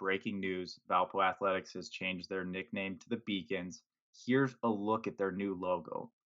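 usual speaking voice

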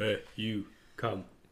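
put-on crude caveman voice. Mocking how another speaker sounds when approaching a girl, in a caveman voice. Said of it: "Just sounds like a caveman".

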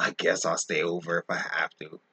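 put-on beaten, deflated voice, low and soft. Retelling how Collins reluctantly agreed to stay over: imitating Collins's defeated voice. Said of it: "you should have heard the defeat in his voice".

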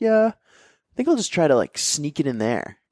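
put-on American man with a Minnesota-Wisconsin accent. Speaker imitating American guys in South Korea, Wisconsin-Minnesota accent. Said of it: "Wisconsin and Minnesota accents".

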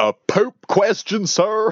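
exaggerated Texan accent, pitched very high. Retelling how he spoke after turning the thing off, big old texan accent. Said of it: "his big old Texan accent just went".

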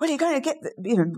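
high-pitched yelling. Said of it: "So he's yelling in my ear".

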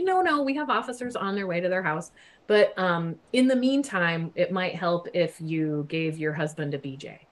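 normal talking voice

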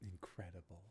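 hushed, deepened put-on voice. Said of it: "What was that, [name]?".

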